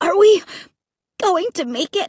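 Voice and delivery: tiny, small, wispy little voice. Running from roaring monsters, a companion asks the narrator, tiny voice. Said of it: "Luke asked in a tiny voice".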